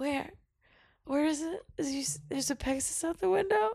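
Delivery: acted groggy, soft, high, half-awake mumble. Retelling answering the roommate at four in the morning: imitating own tired reply. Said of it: "And then I was so tired".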